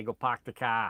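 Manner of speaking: put-on Boston accent. Asked whether he can do accents, trying a boston accent. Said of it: "Can I do a Boston accent?".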